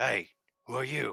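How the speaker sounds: rough, gruff voice, called out. Game master voicing an unseen figure calling out to the players, gruff voice calling out. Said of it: "you hear a gruff voice kind of call".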